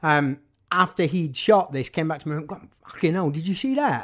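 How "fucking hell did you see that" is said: put-on Essex accent, blurted out. Speaker retells what his friend Paul Harries said after the shot, imitating Paul Harries, Essex accent. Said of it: "that's my impression of an Essex accent".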